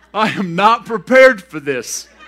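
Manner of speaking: loud laughter mixed with dismay.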